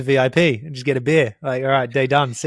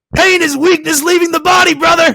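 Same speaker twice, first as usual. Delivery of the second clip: shrill, very high, loud barking shout; 9 dB louder than usual. Retelling a spectator on the course who shouted quotes: imitating a spectator barking. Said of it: "barking at me and shouting David Goggins quotes".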